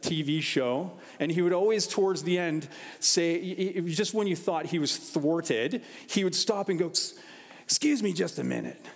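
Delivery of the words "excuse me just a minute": gravelly, rough, bumbling trench-coat detective rasp. Describing a bumbling tv detective's habit near the end, in his raspy voice. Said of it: "He's got this raspy voice".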